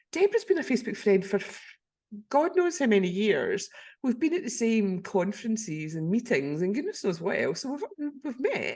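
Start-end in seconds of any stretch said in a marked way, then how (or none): none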